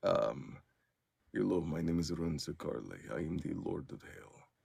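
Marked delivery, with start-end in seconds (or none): 1.3-4.3 put-on low, soft, deep Russian accent. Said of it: "he has that deep Russian accent".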